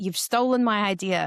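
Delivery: aggrieved, upset, put-on American accent. Retelling an upset American man who contacted the speaker: imitating an American accent. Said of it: "he's saying in his American accent".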